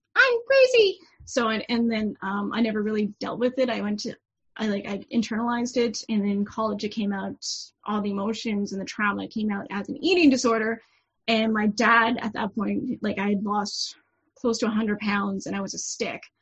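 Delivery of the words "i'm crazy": loud, high-pitched voice. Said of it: "made my head go".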